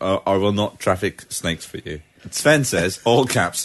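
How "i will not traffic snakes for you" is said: usual speaking voice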